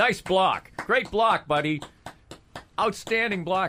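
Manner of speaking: shrill, booming, very loud enthusiastic coach voice. Speaker imitates a college basketball coach clapping for his player, mock-enthusiastic coach praise. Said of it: "clapping his hands and going".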